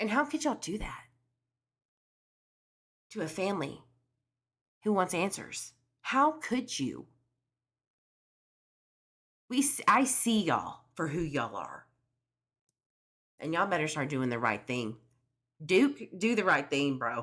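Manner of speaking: outraged, furious rant with swooping pitch. Accusing detectives of feeding information to a mother: angry. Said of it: "I'm so mad".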